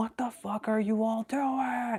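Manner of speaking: screeched yell, pitched way up. Retelling an anime scene that breaks an illusion: imitating Ichigo yelling. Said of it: "he was yelling".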